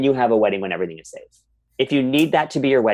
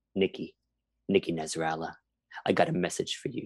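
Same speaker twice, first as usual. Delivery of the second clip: put-on threatening New Jersey voice, lower and quieter; 5 semitones lower, 11 dB quieter than usual. Retelling a birthday cameo message: imitating Caroline Manzo, threatening.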